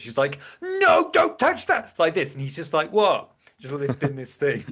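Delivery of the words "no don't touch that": very high, stretched-out, panicked alarmed cry. Retelling a gym story, quoting a woman running across; imitating a panicked woman. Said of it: "the panic in this woman's face".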